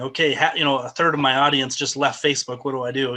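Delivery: plain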